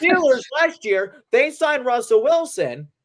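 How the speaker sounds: shouting, very high-pitched yell. Arguing about the Steelers signing Russell Wilson, yelling. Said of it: "I'm sorry I'm yelling".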